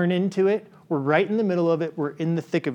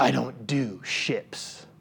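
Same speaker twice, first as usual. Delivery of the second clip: raspy, very slow whisper, barely above a whisper; 5 semitones lower, 6 dB quieter than usual. Quoting a character who doesn't connect to anyone, raspy Batman voice. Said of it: "he always says in a raspy voice".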